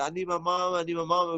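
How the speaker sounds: play-acted weepy, tearful voice through crying. Retelling a childhood scene while the police arrive: imitating own past crying. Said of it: "I remember crying and like".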